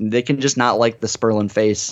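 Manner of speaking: plain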